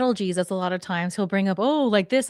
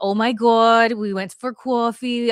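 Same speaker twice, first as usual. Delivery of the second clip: put-on New York accent; 3 semitones higher, 4 dB louder than usual.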